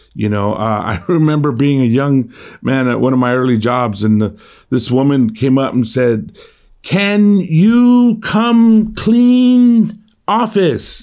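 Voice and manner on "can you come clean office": booming, very loud, high, very drawn-out, condescending. Speaker recalls a woman at one of his early jobs, retelling a very loud voice. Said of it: "in a very loud voice".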